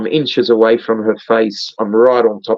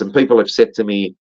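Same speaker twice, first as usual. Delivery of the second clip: normal talking voice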